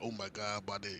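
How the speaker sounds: put-on anxious, nervous, caught-out outburst. Retelling being approached by the cops, imitating own nervous self. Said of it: "I'm nervous".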